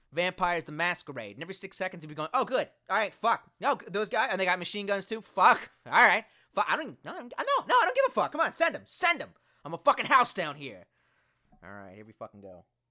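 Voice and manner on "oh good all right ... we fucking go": loud, swooping put-on gangster character voice. Demonstrate the voice you used for your character in Vampires the Masquerade, a put-on gangster voice. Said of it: "this is the voice that I was using when I was playing my gangster".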